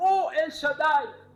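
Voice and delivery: high, loud cry. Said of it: "[name] est en train d'élever sa voix".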